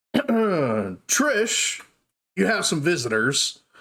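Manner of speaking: high, slow calling out. Game master voicing a shopkeeper calling toward the back of the shop, Garrow calling out. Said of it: "Garrow calls out towards the back".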